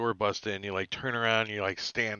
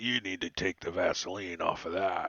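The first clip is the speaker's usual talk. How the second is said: each word growled like a beast; 3 semitones lower than usual. During a game, voicing a character's reaction to a weapon, growling. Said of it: "And he just growls at you".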